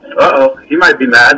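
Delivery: plain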